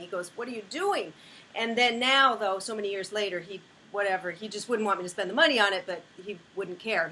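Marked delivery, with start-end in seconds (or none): 0.3-1.1 put-on scandalized, outraged, shocked and upset screaming. Retelling a husband's reaction to a card reading: imitating someone screaming. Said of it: "he was screaming at me".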